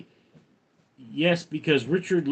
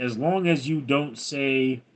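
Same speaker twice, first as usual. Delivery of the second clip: ordinary talk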